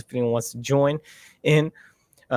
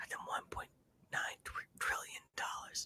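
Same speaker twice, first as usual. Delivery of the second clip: hushed whisper, barely voiced, close to the microphone. Reacting to a clip, imitating a line whispered into the microphone: imitating Joe Biden whispering. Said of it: "Joe Biden whispers in the microphone".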